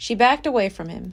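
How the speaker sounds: ordinary delivery, nothing marked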